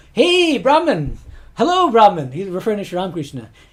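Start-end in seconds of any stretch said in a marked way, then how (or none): 0.2-2.3 loud, swooping, cocky and arrogant delivery. Retelling how a priest greeted Sri Ramakrishna, mock-cocky greeting. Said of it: "there's a little cockiness to it".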